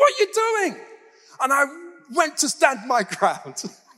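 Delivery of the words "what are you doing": very high, sudden shout. Retelling his reaction right after being pushed hard, reenacting a shout. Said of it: "immediately I shouted".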